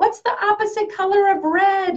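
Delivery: play-acted high-pitched yelling. Retelling asking Dylan about colors: imitating own yelling. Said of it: "Sometimes I'm yelling at him going".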